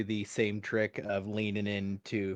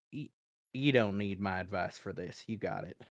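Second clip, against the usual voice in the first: close, hushed, secretive half-whisper; 2 semitones lower, 3 dB quieter than usual. Voicing a character half-whispering comfort into an ally's ear: half-whispering in character. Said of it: "I whisper".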